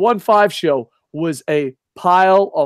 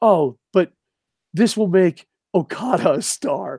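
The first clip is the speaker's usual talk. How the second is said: put-on dead-serious, earnest, slow sincere voice. Retelling a fan's post from Twitter: imitating an earnest fan, no sarcasm. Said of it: "There wasn't an ounce of sarcasm".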